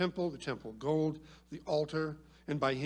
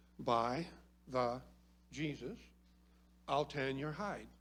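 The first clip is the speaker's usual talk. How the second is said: slow, deliberate, each word carefully spaced out; 4 dB quieter than usual. Quoting what his father would say when he did something wrong, said slowly. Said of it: "I'm going to say this slow".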